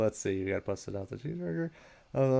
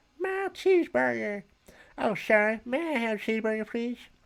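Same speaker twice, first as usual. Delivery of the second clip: put-on high old grandpa character voice; 12 semitones higher, 3 dB louder than usual. Storyteller voicing Grandpa snatching the cheeseburger, in a grandpa voice. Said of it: "this is my grandpa voice".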